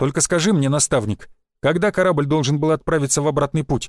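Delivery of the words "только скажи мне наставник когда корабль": usual speaking voice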